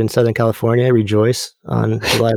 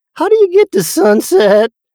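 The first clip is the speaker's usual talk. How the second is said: put-on very high shrill shout, voice cracking; 4 dB louder than usual. Retelling asking a stranger for directions from a window on a date, retelling a cracking yell. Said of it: "I yelled out".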